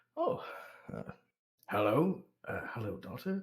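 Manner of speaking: very quiet. Retelling how the father finally greets his daughter, very quiet. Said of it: "says very quietly".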